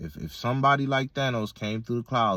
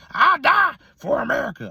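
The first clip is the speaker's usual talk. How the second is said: put-on hillbilly voice, very high and drawn out; 8 dB louder than usual. Voicing how some people feel about America, in a put-on hillbilly voice. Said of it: "I just put on that that that, that hillbilly ass voice".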